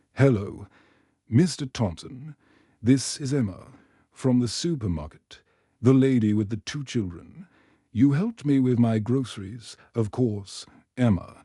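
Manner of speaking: plain reading voice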